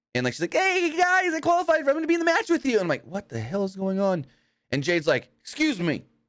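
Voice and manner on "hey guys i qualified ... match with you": extremely high, cheerful tone. Act out Tiffany Stratton barging into the skybox after qualifying, imitating an all-happy Tiffany Stratton. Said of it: "she's like all happy that she qualified".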